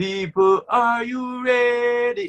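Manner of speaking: high, drawn-out hype-man style call-out.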